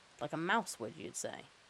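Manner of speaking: ordinary delivery, nothing marked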